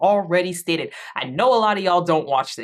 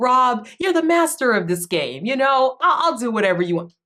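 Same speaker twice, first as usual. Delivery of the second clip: fake-sincere, sarcastic, insincere, mocking tone; 6 semitones higher than usual. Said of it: "Every single thing [name] says sounds so sarcastic".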